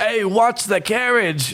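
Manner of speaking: put-on squeaky, very high old-man voice. Narrating as the carriage driver reacts to a passenger: older halfling man voice. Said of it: "an older older halfling man. He's like".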